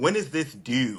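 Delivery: put-on slow, drawn-out Baltimore accent. Retelling a classmate asking about an assignment: imitating a Baltimore accent. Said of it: "first time hearing a Baltimore accent".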